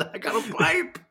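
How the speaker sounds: put-on shrill, thrilled squeal, very high and slow. Retelling John Cena's reaction to receiving a pipe, do it imitating an excited John Cena. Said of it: "He's so excited".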